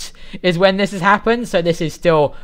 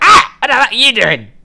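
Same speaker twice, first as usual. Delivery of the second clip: put-on goblin voice, much higher, louder; 7 semitones higher, 7 dB louder than usual. As a player's character approaches, the goblin wearing human clothes reacts, goblin voice. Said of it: "the goblin goes".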